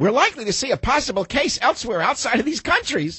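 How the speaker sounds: very high-pitched, put-on little-kid reading voice. Reading a quote aloud in a put-on child voice. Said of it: "Now let's put in the voice of a child".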